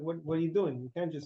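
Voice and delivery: ordinary talk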